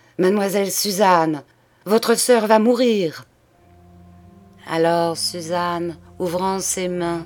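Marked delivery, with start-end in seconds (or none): 0.2-3.3 loud, vibrant, ringing, forceful cry. The priest suddenly stands and cries out to the sister, loud vibrant cry. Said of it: "d'une voix forte, vibrante, il cria".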